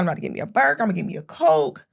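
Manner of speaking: eager, excited, breathy whisper. Retelling pulling up for a burger, imitating own past excitement. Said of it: "I'm excited".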